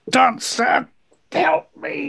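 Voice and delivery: high stage whisper. Voicing a character grappling a player, speaking into their ear: whispering. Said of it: "whispers in your ear".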